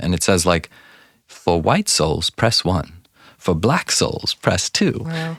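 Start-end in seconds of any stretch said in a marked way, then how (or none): 1.3-5.0 put-on sweet, polite British woman's recorded voice. Speaker imitates the AI phone recording they made, in a polite British woman's voice. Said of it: "a British woman's voice talking very nice".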